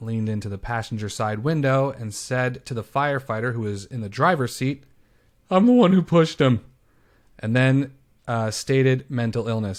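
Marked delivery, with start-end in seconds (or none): 5.5-6.6 play-acted whimpery, stupid-sounding, high, raised whine. Retelling what a man said to a firefighter, in a mock-whimpering voice. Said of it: "sounding all whimpery and stupid like that".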